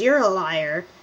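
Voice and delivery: light, playful, teasing, acted tone. Retelling how a teacher called the speaker a liar: imitating a teacher teasing. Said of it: "say it in a manner that's teasing".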